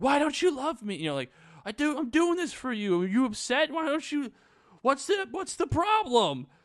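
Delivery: shrill, very high, loud yelling. Retelling a story where a character yells at a dog in a park, imitating someone yelling. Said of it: "Lisa starts yelling at Prince the dog".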